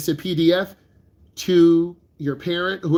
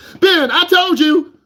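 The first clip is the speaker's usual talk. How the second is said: very high, drawn-out scolding telling-off; 12 semitones higher, 7 dB louder than usual. Acting out a parent scolding a nervous student driver: imitating a parent scolding. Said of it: "your mom and dad cuss you out".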